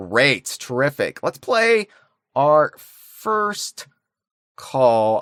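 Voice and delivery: slow, halting delivery with words spaced by breaks. Pulling up the first call while introducing it, talking really slowly. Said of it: "I'm talking really slow".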